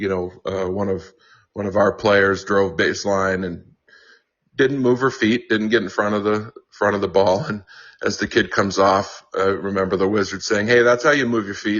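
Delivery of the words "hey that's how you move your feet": mock sarcasm laid on as thick as possible. Retelling a coach's remark to a player who fouled: imitating the Wizard's sarcasm. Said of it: "as sarcastic as he can be".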